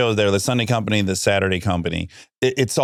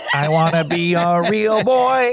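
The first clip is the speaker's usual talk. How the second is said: put-on robot voice, higher pitched; 9 semitones higher than usual. Showing the others a robot character when asked: robot character voice. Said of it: "What's the robot character?".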